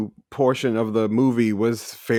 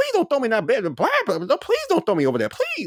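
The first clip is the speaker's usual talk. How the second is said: very high, fast, sing-song delivery; 13 semitones higher than usual. Quoting a cartoon character to friends, in Brer Rabbit voice. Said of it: "was Brer Rabbit's voice".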